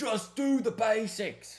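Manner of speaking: bad fake British accent, pitched very high. Praising a player's basics, says a line in a bad british accent. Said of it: "That's a bad British accent from me".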